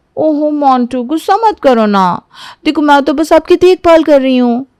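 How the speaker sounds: high, wholly innocent, soothing tone. Reading a story, the wife soothes her angry husband: fully innocent tone. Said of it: "Radhika पूरी मासूमियत से बोल रही थी".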